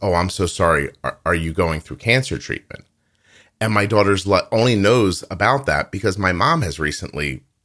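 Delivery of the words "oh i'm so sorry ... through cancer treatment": put-on sullen woman's voice. Retelling what a woman said to the speaker's daughter, imitating a sullen woman. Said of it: "the woman gets very sullen and says".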